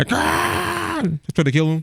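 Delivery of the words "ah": high, soft mock scream. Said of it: "the mom and dad started screaming at him".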